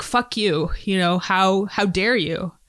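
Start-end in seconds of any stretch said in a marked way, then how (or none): none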